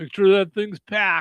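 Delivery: put-on stoner character voice. Joking about people getting high for the Super Bowl: put-on stoner voice. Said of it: "I have to do it in the proper voice".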